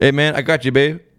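put-on Louisiana accent. Imitating a Louisiana dude greeting a buddy: imitating a Louisiana accent. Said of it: "if you say it with a Louisiana accent".

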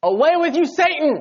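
very high, loud, angry scolding shout. Retelling a rebuke from scripture, acting out the line: retelling a yell. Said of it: "He probably yelled it".

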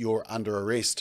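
ordinary talk, nothing marked

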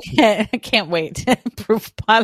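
talking through laughter. Teasingly repeating the other speaker's words back to them, laughing while speaking. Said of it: "I'm just laughing".

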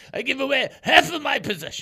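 put-on Yiddish accent. Trivia host repeating the quote before asking who said it: Yiddish-style accent. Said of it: "kind of like a Yiddishy".

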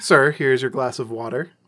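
plain

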